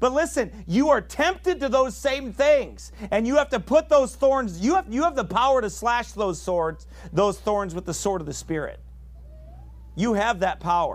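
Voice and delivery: heated, fired-up, worked-up preaching voice, pitched high. Speaker preaching to listeners, getting worked up. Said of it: "I'm getting worked up".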